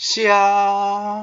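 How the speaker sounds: xia held flat on a high pitch. Demonstrating the high tone: high level tone on xia. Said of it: "it's the high tone. And it sounds like this".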